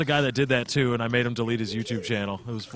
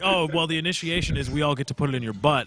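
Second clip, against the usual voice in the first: usual speaking voice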